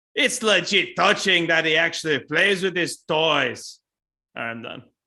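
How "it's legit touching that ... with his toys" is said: fake Scottish accent, louder. Recapping a movie scene for a podcast, in a put-on scottish accent. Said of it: "Just line reading Scottish Robbie".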